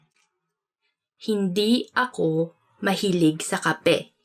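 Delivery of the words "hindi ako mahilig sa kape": slow, drawn-out, repeated words.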